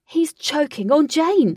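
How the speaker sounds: full, loud, high, drawn-out shout. Alec, as the boss grabs his neck and wheezes: shouted. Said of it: "Shouted Alec".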